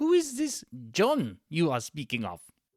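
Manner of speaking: terrible, overdone put-on German accent. In character as a couples therapist, answering a co-host: Doctor Gunther von Leberkäse voice. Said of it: "doing a terrible German accent".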